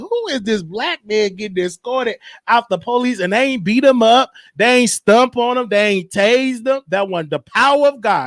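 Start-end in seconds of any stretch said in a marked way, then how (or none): none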